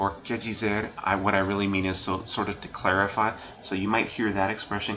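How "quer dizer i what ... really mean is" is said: normal talking voice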